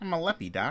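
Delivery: high-pitched cartoon rabbit-style voice. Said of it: "I just hear the, the Bugs Bunny voice in my head now".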